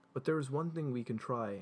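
ordinary delivery

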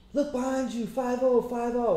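high, mock yelling.

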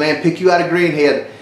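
plain

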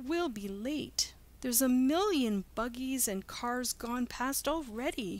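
high, anxious, fretful, worried. Pat, waiting on Uncle Tom who is slow in coming, worried. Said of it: "worried Pat".

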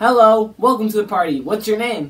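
taunting copycat echo, word for word. Copying what the other person just said, mocking parrot imitation. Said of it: "Stop imitating".

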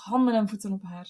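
ordinary delivery, nothing marked

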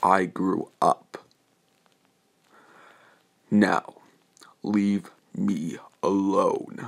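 menacing, very slow, deliberate, terrifying voice. Reading a fan story, a character answers his old bully: very terrifying voice. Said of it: "Getting in a very terrifying voice".

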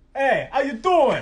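put-on Boston accent. Someone runs through accents on request, greeting in a Boston accent. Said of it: "now say it Boston".

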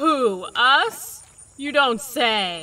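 very slow, loud, heavily sarcastic delivery. Asked by a companion whether they're being too noisy while fishing, answering sarcastically. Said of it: "I detected the sarcasm that time".

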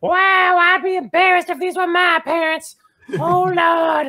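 very high, scornful, sneering ventriloquist-dummy voice. Projecting a voice into a ventriloquist dummy during a scene: sneering ventriloquist dummy voice. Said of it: "But I project my voice to the dummy, which is currently like sitting wherever [name] has it, and I say, oh wow, what a stuck up bunch of clowns".

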